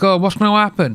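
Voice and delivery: naive, clueless voice. Reacting to a police video, imitating Messiah. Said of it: "He's like".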